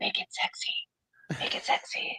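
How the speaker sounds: breathy whisper under the breath. Retelling what an actor who had lost his voice kept saying: imitating someone whispering. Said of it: "he kept whispering".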